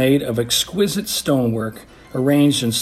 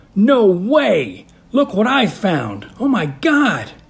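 thrilled, high excited shout, swooping, stretched very long; 7 semitones higher, 3 dB louder than usual. Reading a story, voicing a character who finds a knife: excited shout. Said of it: "Dylan shouted".

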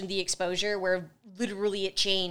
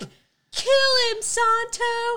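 mock shrill, thrilled shout at very high pitch; 6 dB louder than usual. Retelling nuns watching a wrestling match against El Toro, retelling excited nun yelling. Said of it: "these nuns were so excited to watch".

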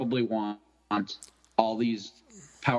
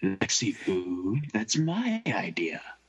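slow, drawn-out villain voice, pitch swooping up and down. Showing how the Joker would really say the line: Joker voice. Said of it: "he wouldn't say it like that. He'd say".

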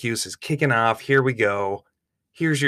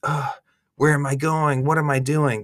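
mock out-of-breath panting, pitched higher; 3 semitones higher than usual. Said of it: "out of breath".

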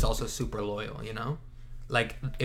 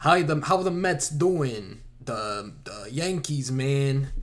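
put-on poorly done New York Italian accent. Imitating the typical Italian man in New York, in a terrible Italian New Yorker accent. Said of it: "the typical like Italian man in New York".

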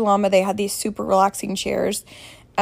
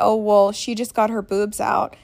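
ordinary talk, nothing marked

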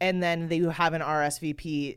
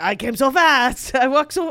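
strange put-on silly voice, high, loud, booming; 8 semitones higher, 9 dB louder than usual. Getting into the elevator Jack held, talking in a really weird put-on voice. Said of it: "started talking in this really weird voice".

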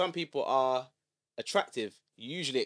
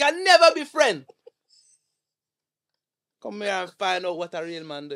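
terrible put-on Caribbean accent, much higher; 6 semitones higher, 10 dB louder than usual. Mimicking what you hear walking down the road, in a bad caribbean accent. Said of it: "That was a terrible Caribbean accent".

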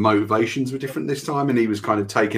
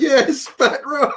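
very high, gleeful, squealing shout. Retelling watching a scene alone in here: re-enacting own shout. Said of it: "I literally shouted out".

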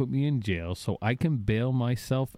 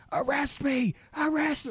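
acted, very high, dragged-out furious shriek. Retelling a news story, imitating a woman screaming. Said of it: "just screaming".

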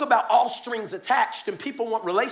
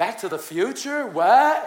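put-on slow, baffled, clueless young-sounding reaction; 4 dB louder than usual. Imitating millennials who don't remember an eighties sitcom: imitating millennials. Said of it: "The millennials are like".

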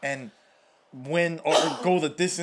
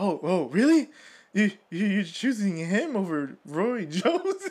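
put-on mock-incredulous disbelieving tone, slower; 3 semitones higher than usual. Retelling the tone someone used about his pick of fighter, mock-incredulous tone. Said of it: "That was a tone like".

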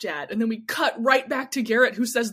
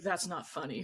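mock serious tone, lower and quieter; 6 semitones lower, 12 dB quieter than usual. Retelling a woman's reaction to a man's joke, mock super-serious. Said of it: "Callie is like super serious all of a sudden".

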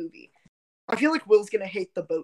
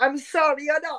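put-on Italian-sounding accent; 8 semitones higher, 4 dB louder than usual. Asking about a performer's delivery, speaker repeats her line in an Italian-sounding accent. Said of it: "Why does she sound Italian when she says that?".

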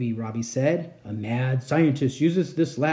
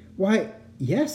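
stammering, much higher pitch; 5 semitones higher than usual. The narrator, still shaking, answers Robbie's question, stammering. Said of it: "I stammered".

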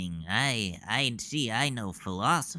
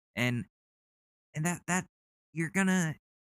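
high-pitched, halting, stammered, stumbling start; 7 semitones higher than usual. Speaker trips over words, then apologizes; stuttering. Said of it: "Sorry, I'm stuttering".

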